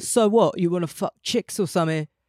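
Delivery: put-on British accent. Imitating a friend's partner asking a blunt question: British accent. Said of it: "maybe he's British though".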